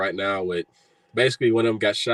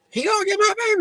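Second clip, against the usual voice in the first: put-on woman's scream, higher pitched. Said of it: "screaming in the middle of the street".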